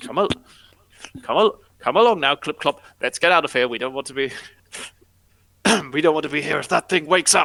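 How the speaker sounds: put-on young, scared voice with youthful frightened tone. Voicing a younger character leading someone to flee: younger-sounding scared voice. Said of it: "a voice that now just sounds not grizzled and scared".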